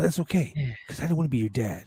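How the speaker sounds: calm put-on wrestler voice. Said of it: "this is the voice that he did it in, in the calmness too".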